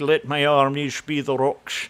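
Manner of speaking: put-on Scottish film star accent. Quoting a line from the third Indiana Jones: Sean Connery impression. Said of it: "I can do, uh, Sean Connery a little bit".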